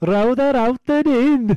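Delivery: high, slow, loud, drawn-out silly Welsh voice.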